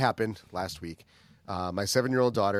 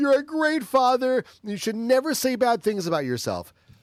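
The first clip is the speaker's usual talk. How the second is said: put-on screaming, crying child voice, higher pitch; 13 semitones higher, 3 dB louder than usual. Retelling a daughter screaming reassurance during a tantrum: imitating a screaming, crying child. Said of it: "she started screaming at me".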